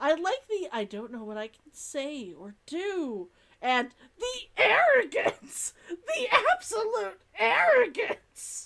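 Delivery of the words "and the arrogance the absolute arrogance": furious, indignant outburst, loud and high-pitched. Discussing what she might say, the speaker delivers the line with put-on anger. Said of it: "I am putting that sort of anger behind it".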